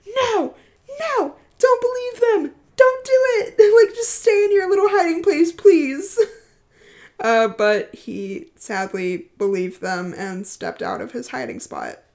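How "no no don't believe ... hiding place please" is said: put-on very high, loud, pleading, begging scream. Recalling reading the story, the speaker re-enacts screaming at the screen: retelling screaming at the screen. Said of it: "I was screaming at my screen".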